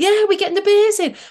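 put-on Manchester accent. Retelling meeting teammates from Wigan, slipping into a put-on Manchester accent. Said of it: "I started putting on my Manchester accent again".

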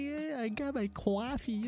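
cute, sweet, adorable, slow and drawn out. Imitating Dan saying he got coffee: imitating Dan sounding adorable. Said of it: "he sounds so adorable. He's like".

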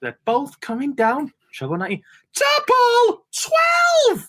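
very high, soaring, swooping commentator call. Recalling a second nine darter, imitating a darts commentator's call. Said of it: "he's like".

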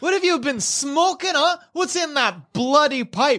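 angry yelling crew-member voice. Voicing a crew member yelling at a sailor in an argument: yelling as Messiah. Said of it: "Messiah is just yelling, like".

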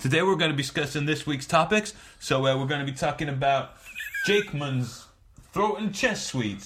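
put-on American accent, podcaster style. Opening a podcast in a put-on American accent. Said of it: "'cause it's American, like what all the proper podcasts have".

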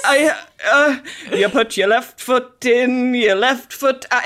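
put-on babbling, stammering voice. Retelling how Big suddenly babbles at Carrie: imitating Big talking gibberish. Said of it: "talking gibberish".

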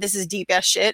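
put-on sarcastic voice. Retelling own earlier post line, said sarcastically: retelling own sarcastic line. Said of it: "I was being so far fucking sarcastic".

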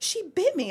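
put-on, very high, loud, shrill panicked outburst. Retelling her reaction after her husband asked about the hit: retelling own panic. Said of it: "And I was panicking".

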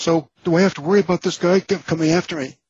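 very high squeaky voice, octaves up. Retelling asking two feds a nervous question, voice up like Mickey Mouse. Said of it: "my voice goes up a couple of octaves, and I sound like Mickey Mouse".

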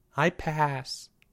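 small, soft, shrunken voice. Told to come get a sticker, declining, in a small voice. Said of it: "said Charlie in a small voice".

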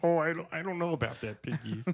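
hesitant, hedging cartoon frog puppet voice. Acting out a scene where Miss Piggy propositions him: voicing Kermit the Frog. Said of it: "This is what I hear from Devin's room".

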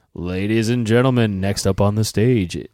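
very loud, smooth, slick, showy announcer voice. Showing how own announcing sounds, too clean: smooth, clean announcer voice. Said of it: "it's too smooth".

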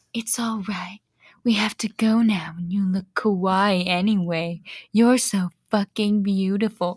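put-on sexy, seductive voice. Reading a story aloud, the speaker voices a character's line in a sexy voice. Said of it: "I have to say it in a sexy voice now".

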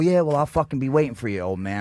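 ordinary talk

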